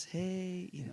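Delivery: nice, hushed, gentle, soft voice. Showing how you will wake people up gently, in a nice soft voice. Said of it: "Nice soft voice".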